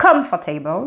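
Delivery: COM hit hard, rest of comfortable soft.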